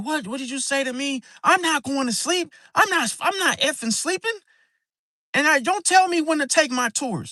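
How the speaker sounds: very high, furious, angry screaming rant. Retelling how she snapped at him after he said she was falling asleep: retelling an angry yell. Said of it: "you screaming and yelling at me".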